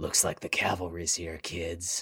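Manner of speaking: very low, deep, growled delivery. Stafford turns to face the approaching group and the kid rebels, growling. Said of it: "Stafford turns to face you and growls".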